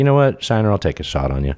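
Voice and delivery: ordinary delivery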